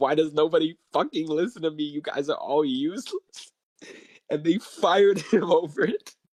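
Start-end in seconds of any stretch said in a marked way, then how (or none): 0.0-3.5 mock enraged, furious screaming. Retelling a man losing it in class, imitating someone screaming. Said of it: "He starts screaming like".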